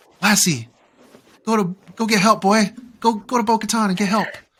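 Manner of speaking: high, loud pleading voice. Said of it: "we see the Lassie moment when he says".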